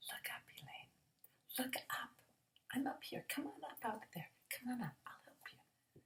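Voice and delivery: quiet, hushed, high, still small voice. Elaine recalls hearing God calling to her: still small voice of God. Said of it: "that still small voice of God calling to me".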